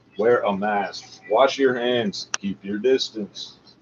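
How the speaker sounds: text-to-speech computer voice. Repeating the mask and handwashing message, text-to-speech computer voice. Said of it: "in the text-to-speech computer voice".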